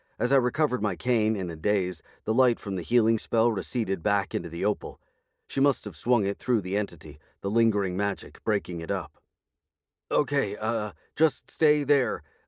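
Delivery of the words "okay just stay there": halting, slow, stammering speech. The dazed narrator speaks to Jackie after the healing spell, stammering. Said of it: "I stammered at her".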